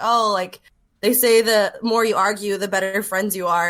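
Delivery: ordinary talk, nothing marked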